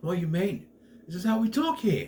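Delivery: put-on high New Zealand accent. Retelling a story character answering another, mock yelling in a new zealand accent. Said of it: "yelling with the New Zealand accent".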